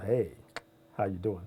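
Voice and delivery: very low, deep put-on radio-host voice. A morning show host greets listeners in a put-on deep voice. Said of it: "just be all deep voice Kendall".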